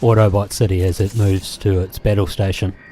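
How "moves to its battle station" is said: ordinary talk, nothing marked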